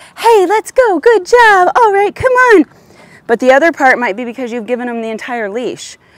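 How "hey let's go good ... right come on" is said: very high, drawn-out, gushing excited voice. Showing how talking to a dog causes jumping: demonstrating excited talk to a dog. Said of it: "you're talking to him like this".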